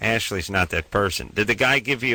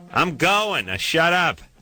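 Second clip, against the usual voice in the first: shouting, pitched higher; 8 semitones higher than usual. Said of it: "I'm yelling at you so you can hear me".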